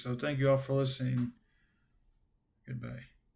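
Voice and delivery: tired, fatigued, strained voice. Ending the broadcast and thanking listeners: fatigued voice. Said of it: "My voice is getting fatigued".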